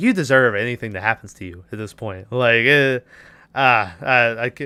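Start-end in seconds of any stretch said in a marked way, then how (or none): none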